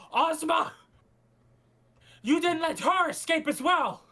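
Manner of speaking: big, loud, booming bellow. Retelling what a tall man says after standing up, booming voice. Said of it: "Like a booming voice".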